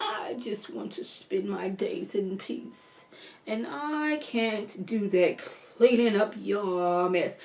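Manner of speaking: hushed, slow, whispered, uppity wicked grandma voice. Recapping a cruel grandmother character for listeners, in an evil sedity grandma voice. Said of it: "my Evil Sedity Grandma voice".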